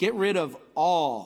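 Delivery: slow, deliberate reading with long pauses between phrases.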